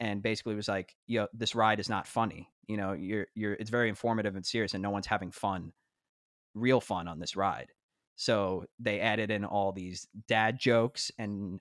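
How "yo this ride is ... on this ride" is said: ordinary talk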